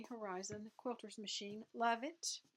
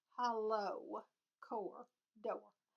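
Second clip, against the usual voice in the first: southern US accent slipping in on door. Describing what her husband got for ironing, slipping into a southern accent. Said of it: "There goes that southern accent again".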